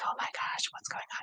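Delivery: hushed, breathy whisper, barely audible. Speaker explaining she was whispering in some of her videos: whispering. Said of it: "I was kinda whispering like".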